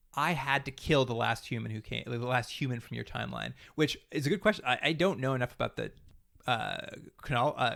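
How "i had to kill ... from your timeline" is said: normal talking voice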